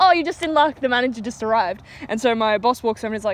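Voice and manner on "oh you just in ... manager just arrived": friendliest, cheerful customer-service manner. Retelling own reply to a customer: imitating own friendly customer service manner. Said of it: "my friendliest customer service smile".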